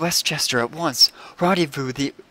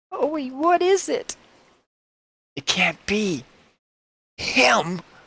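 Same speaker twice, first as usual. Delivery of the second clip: spooky horror-movie dread, pitched up; 8 semitones higher than usual. Spotting someone on the hillside, talking like a horror movie. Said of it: "why are you talking like a horror movie?".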